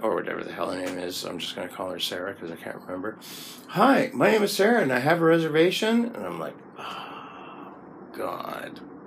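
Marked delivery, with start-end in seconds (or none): 3.7-6.1 bright, chirpy American woman's voice, pitched up. Retelling a receptionist greeting over an intercom, in a chirpy female American voice. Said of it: "this chirpy female American voice".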